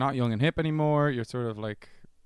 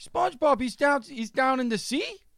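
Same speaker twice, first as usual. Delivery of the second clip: put-on perplexed, baffled New York dad voice, much higher; 13 semitones higher than usual. Retelling a video where a dad talks to his kid in the back, imitating a perplexed New York dad. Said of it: "clearly very perplexed by the whole concept".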